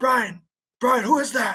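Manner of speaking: mock worried, alarmed yelling. Retelling calling out to an unseen noise in the woods: imitating their own yelling. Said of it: "So we start yelling".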